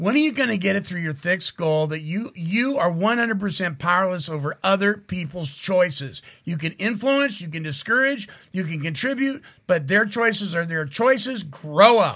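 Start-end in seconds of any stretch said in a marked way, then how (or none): none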